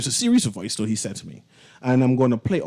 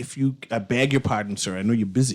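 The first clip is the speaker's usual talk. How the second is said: ordinary talk, nothing marked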